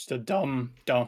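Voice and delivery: voice breaking mid-word. A speaker describing a map's layout, voice cracking. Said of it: "Oh, voice crack".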